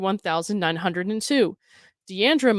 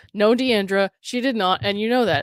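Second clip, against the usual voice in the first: usual speaking voice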